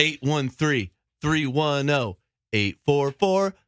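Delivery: slow, deliberate, careful, each digit spelled out one by one. Repeating a phone number after being told not to: saying the number slowly. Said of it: "do not give out the number again slowly".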